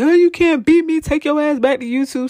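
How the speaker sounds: mock, very high-pitched wrestler's scream. Retelling a wrestling match ending: imitating roman screaming. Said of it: "he starts screaming".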